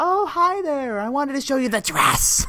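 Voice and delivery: very high, eerie, creepy voice. Imitating a character showing off her dress, creepy bridezilla voice. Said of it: "this creepy bridezilla".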